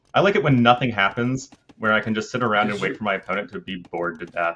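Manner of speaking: normal talking voice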